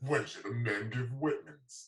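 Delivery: slow TV commercial announcer delivery. Urging someone to read a line like an ad, the speaker demos a commercial voice. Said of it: "Like use a commercial voice".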